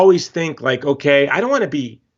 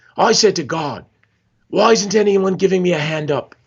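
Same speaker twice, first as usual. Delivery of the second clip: horrible fake Australian accent drifting into Scottish; 3 semitones higher than usual. Retelling what Nick said at a tent revival: imitating Nick, horrible Australian accent. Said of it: "This is my horrible Australian accent".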